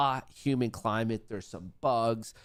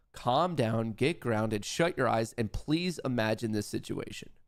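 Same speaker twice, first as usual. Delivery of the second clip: usual speaking voice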